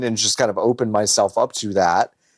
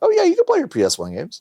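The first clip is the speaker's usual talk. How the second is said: high, fast, nonchalant tone. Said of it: "oh, nonchalantly".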